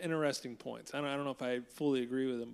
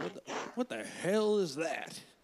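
pitched-up cartoon rooster voice; 5 semitones higher than usual. Imagine Malcolm X reacting to an explanation of TikTok, in a Foghorn Leghorn voice. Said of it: "I don't know why I made him sound like".

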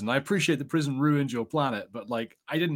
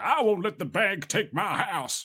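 put-on higher, grumpy old Southern man voice; 7 semitones higher than usual. Speaker showing the voice they went for, doing a put-on old curmudgeonly Southern dude. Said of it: "go for that like old curmudgeonly dude who's like".

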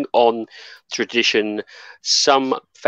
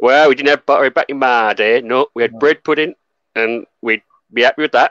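loud, really bad put-on Yorkshire accent; 5 dB louder than usual. Answering a question about bread pudding, in a really bad yorkshire accent. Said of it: "Tried a bit of a really bad Yorkshire accent".

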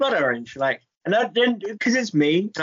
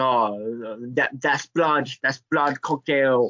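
put-on German accent on every word, drawn-out oh; 4 semitones lower than usual. Imagining people at a weird bar in Germany: put-on German accent. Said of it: "That's my German accent".

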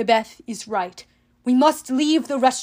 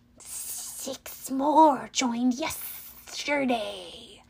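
snake-like, reptilian monster voice; 7 dB quieter than usual. A narrator reads an unseen speaker calling from the corridor, in a reptilian voice. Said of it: "a reptilian voice came down from the corridor".

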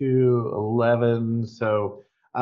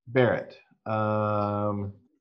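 ordinary talk, nothing marked

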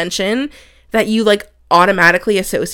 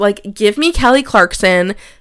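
ordinary talk

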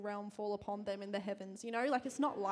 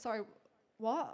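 put-on confused voice. Retelling a mix-up in a shop, imitating own confused reply. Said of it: "I was, like, really confused".

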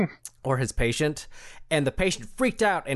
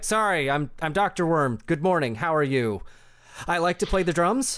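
sorry, fumbling, polite, friendly put-on character voice; 3 semitones higher than usual. Voicing an apologetic doctor in a game scene: Doctor Worm character voice. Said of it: "He's like".

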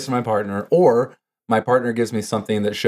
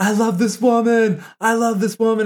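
mock, unrestrained, shrill, very high screaming; 12 semitones higher than usual. Retelling a commercial where a man holds his girlfriend: imitating a man screaming. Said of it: "starts screaming".

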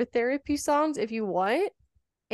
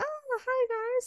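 very high, excited, fake podcast host voice; 14 semitones higher, 5 dB quieter than usual. Showing how own podcasting voice sounds: imitating own high excited voice. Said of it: "go up high 'cause I'm, like, excited".

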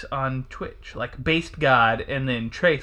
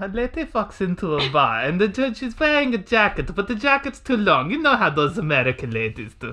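camp, sassy, high-pitched put-on German accent; 6 semitones higher than usual.

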